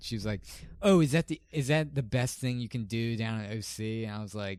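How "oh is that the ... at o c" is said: normal talking voice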